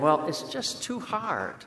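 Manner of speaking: acted-out, laid-on, swooping, sing-song whining. Retelling a reply after being told to paint it all again, in best whining voice. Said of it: "In my best whining voice".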